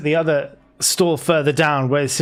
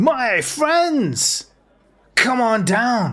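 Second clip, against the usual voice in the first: very friendly, jovial merchant voice, high and swooping; 8 semitones higher than usual. Voicing a market stall trader who shouts to the players: friendly, jovial merchant voice. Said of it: "very friendly, very jovial kind of voice".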